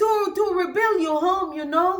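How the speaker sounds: put-on Spanish accent with very high-pitched voice.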